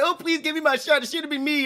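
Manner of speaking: whiny, half-sobbing, high crying voice. Quoting a woman who would not allow whining, imitating whiny crying. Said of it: "then like a whiny crying".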